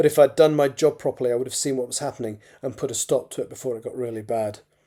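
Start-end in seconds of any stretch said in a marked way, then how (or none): none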